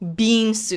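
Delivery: the word bean stressed. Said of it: "Emphasis on bean".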